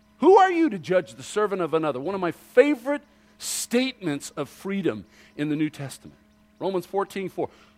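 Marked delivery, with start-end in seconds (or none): 0.2-2.0 very emphatic, loud, quick, forceful delivery. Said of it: "very emphatically".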